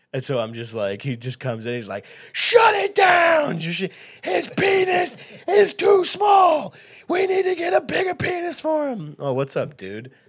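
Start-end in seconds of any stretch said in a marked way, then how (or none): 2.3-9.1 slow, very high, loud shout. Imagining a man's words as a famous bar fixer: John Taffer voice. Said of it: "I imagine it in John Taffer speak".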